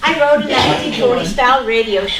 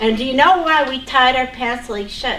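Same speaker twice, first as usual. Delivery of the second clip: ordinary talk, nothing marked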